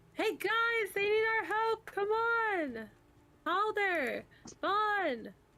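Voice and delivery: very high, drawn-out, long-carrying shout. Yelling to the camp for help in character: character yelling to camp. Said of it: "I yell".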